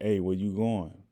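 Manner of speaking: loud, called-out yell. Recounting a young guy calling out from a car, retelling a yell. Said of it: "He yelled out the car like".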